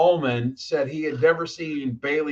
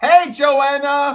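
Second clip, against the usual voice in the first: very high-pitched, loud shouting, carrying far; 12 semitones higher, 7 dB louder than usual. Calling out to someone way in the back, yelling. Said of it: "Why are you yelling?".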